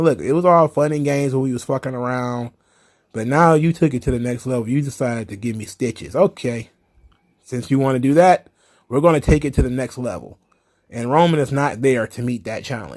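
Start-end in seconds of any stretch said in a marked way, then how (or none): none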